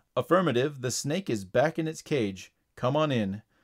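ordinary delivery

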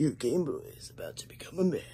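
hushed, quiet, macho action-hero delivery. Looking at a game that recalls Duke Nukem, doing a Duke Nukem voice. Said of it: "do his Duke Nukem voice".

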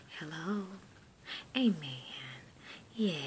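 faint, very quiet, barely audible murmur. Showing how the speaker's mom answers the phone: imitating mom's very quiet voice. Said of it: "it sounds like this".

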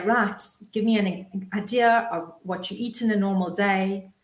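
normal talking voice

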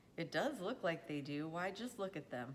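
ordinary talk

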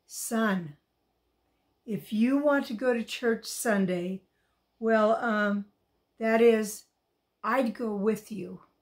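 very soft, quiet and hushed. Narrator reads a father finally speaking again to his son DJ, very softly. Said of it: "his dad spoke again very softly".

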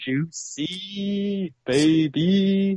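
forced, false-sounding excitement, pitched high. Reacting to news that a big juicy topic is coming: fake-sounding excitement. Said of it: "you sound fake excited".

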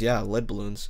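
plain

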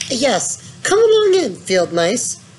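eager, high-pitched voice. Narrator reads one character calling to a group of field mice: eager cry. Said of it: "cried the Mole eagerly".

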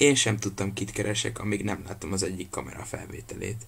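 plain reading voice

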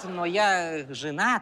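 put-on speaking with a Georgian accent.

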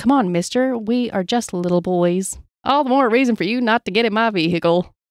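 ordinary delivery

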